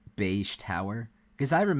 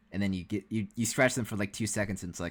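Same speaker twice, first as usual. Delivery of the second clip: ordinary delivery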